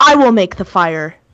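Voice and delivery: indignant, affronted, put-out delivery. Voicing a character with an indignant look on her face: indignant. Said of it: "this indignant look on her face".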